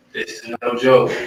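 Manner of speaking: usual speaking voice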